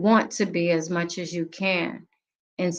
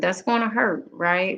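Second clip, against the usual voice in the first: normal talking voice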